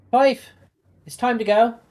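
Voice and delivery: shrill, very high, very loud hollering. Voicing a mother calling her son to leave: mother yelling for her son. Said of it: "You can hear his mother yell".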